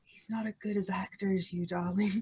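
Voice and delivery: barely audible, soft half-whispered delivery. Voicing a character leaning over to another: half-whispering in character. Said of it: "just whispers".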